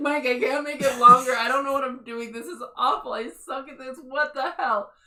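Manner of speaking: mock very loud, on-the-verge-of-crying wail. Retelling what they said while writing their first article, acting out almost crying. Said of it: "I'm almost crying".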